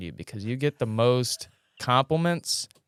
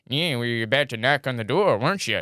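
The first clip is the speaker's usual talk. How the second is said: unhinged, loony, crazy put-on voice. Imagining sitting in a rocking chair greeting people who knock anyway, in a crazy voice. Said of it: "do a crazy voice like".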